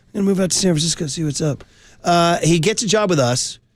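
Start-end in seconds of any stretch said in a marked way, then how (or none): 0.1-1.6 hoarse, scratchy, rough voice. Retelling the kid's move out to San Francisco: imitating Danny Everman's scratchy voice. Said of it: "he's got this scratchy voice".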